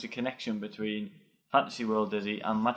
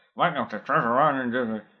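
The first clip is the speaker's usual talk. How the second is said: put-on loud, ridiculous old home-computer voice; 2 semitones higher, 6 dB louder than usual. Recalling an old game's loading screen, in a ridiculous Spectrum voice. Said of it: "in some sort of ridiculous Spectrum voice".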